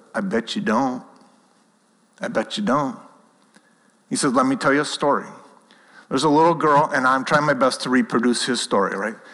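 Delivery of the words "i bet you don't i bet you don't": put-on American southern accent. Retelling a talk at a pastor's conference, imitating Randy's southern accent. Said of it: "in his southern accent says".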